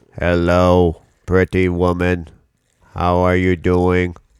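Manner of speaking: low, level, monotone, sexy robot voice. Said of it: "I am sexy robot voice".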